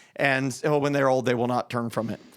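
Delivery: ordinary talk, nothing marked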